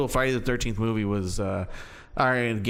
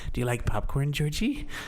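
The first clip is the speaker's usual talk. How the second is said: clown-like creepy voice; 3 semitones higher than usual. Quoting the film to a friend in a creepy Pennywise voice. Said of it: "just the the creepy voice".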